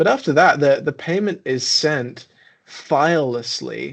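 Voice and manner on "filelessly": "filelessly" deliberately drawn out slowly. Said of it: "I say that so slowly".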